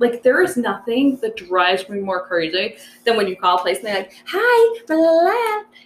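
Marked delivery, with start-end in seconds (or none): 4.3-5.6 super-friendly, very high, screechy receptionist phone voice. Mocking how people answering business phones sound, screechy fake phone voice. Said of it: "have this screechy voice, like the phone voice".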